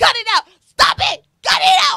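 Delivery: acted, frantic, very high, loud, shrill screaming. A mother retelling how she yelled at her children, acting out her own screaming. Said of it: "I'm screaming. I'm like".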